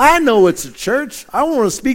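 put-on Texas accent. Retelling a caller's reply to the woman who answered the church phone, in a texas accent. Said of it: "I'm going to give you my best Texas accent".

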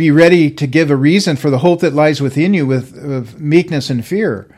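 ordinary talk

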